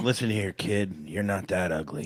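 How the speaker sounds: drunk put-on leading-man movie-star voice. Acting out a movie scene with the other speaker, playing Bradley Cooper: Bradley Cooper voice. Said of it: "I'll be Bradley Cooper from the movie".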